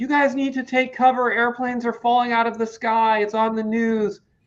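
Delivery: high-pitched, freaking-out, panicked voice. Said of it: "she's freaking out".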